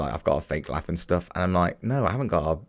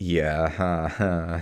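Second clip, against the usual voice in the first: mock, put-on polite laugh. Retelling how they fake a laugh when something is not funny: imitating own polite laugh. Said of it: "The polite laugh".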